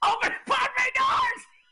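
very high, stressed-out voice. Imitating a brother getting stressed in an astronaut role: imitating Jeremy getting stressed. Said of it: "how stressed he would get".

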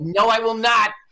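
put-on Brooklyn accent. Retelling a phone exchange, answering in Harvey's Brooklyn accent. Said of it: "It must be the brawl of your Brooklyn accent".

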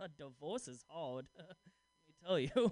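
soft, weary, sad-sack put-on voice. Playing his younger self dressed like a middle-aged divorcee on day one: put-on sad middle-aged divorcee voice. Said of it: "I just love doing that voice".

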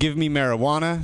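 ordinary talk, nothing marked

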